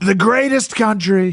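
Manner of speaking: very high, throaty rally-speech voice. Showing another speaker the easy way to do Trump: Trump rally voice. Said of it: "the easiest way to do Trump".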